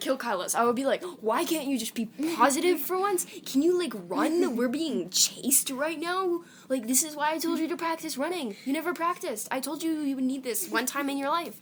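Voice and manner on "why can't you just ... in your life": mock fed-up, exasperated scolding rant, pitched up. Acting out a made-up quest quarrel with a friend: pretend angry scolding. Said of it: "I get so mad".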